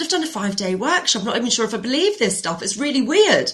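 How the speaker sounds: ordinary talk, nothing marked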